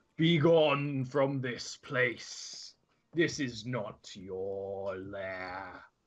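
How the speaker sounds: very slow, deep, stretched-out demonic rumble. Voicing a creature speaking Abyssal that warns the party away: booming, rumbling demonic voice. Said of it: "you hear abyssal booming".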